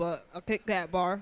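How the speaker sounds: talking with mouth full. Asked by the host what they're eating, answering while talking with mouth full. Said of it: "My mouth is full".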